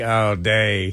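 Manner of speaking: put-on deadpan, flat voice. Retelling a coach's comment about a rival's return: imitating Josh Heupel's deadpan voice. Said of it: "said it with deadpan face and voice".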